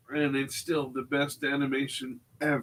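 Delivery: deadpan sarcastic tone.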